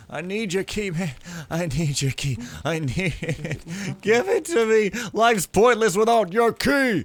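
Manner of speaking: high, loud whining voice.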